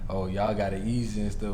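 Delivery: plain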